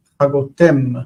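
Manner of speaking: Chagotem with the final syllable tem stressed. Two people discussing Hebrew pronunciation, final-syllable stress on Chagotem. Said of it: "With the stress on the heavy ending".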